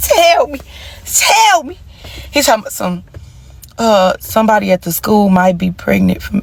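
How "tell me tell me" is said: high, drawn-out put-on tearful crying. Retelling a boyfriend's confession to listeners, imitating herself crying. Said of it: "I started crying".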